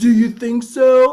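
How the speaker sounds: very loud, high, stupid-sounding blaring voice. Retelling a film character's reply after a robbery in a stupid voice.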